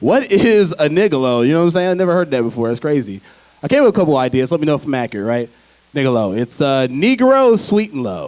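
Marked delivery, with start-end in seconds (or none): none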